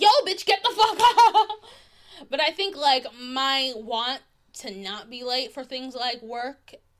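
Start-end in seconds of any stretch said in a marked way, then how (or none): 0.0-1.5 very loud, very high, shrill, climbing yell. Describing getting up to make it to work, imitating yelling at oneself. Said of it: "And you're like yelling at yourself".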